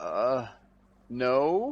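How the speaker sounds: put-on baffled, faltering, swooping, hesitant little voice. Retelling a woman's answer when asked to be more specific: imitating a confused reply. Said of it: "even more confused".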